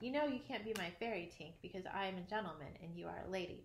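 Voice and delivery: ordinary delivery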